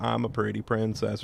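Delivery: ordinary talk, nothing marked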